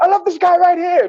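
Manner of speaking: very high-pitched, gushing star voice. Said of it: "he goes a high-pitched voice".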